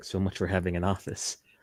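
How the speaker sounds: muttering under breath. Voicing a character muttering a remark: muttering under breath. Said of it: "you just hear Julian under his breath".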